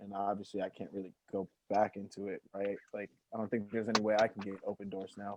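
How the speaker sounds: soft, glum, mopey, depressed-sounding tone. Asking whether he can still get Opendorse now: mock-depressed plea. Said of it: "you sounded really depressed when you said".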